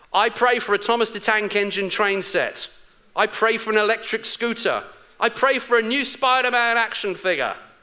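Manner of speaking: put-on child's voice, high, bellowing at top volume. Retelling a joke about a boy praying to God: imitating a child shouting a prayer. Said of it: "praying at the top of his voice".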